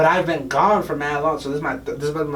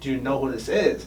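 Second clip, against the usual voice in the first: ordinary talk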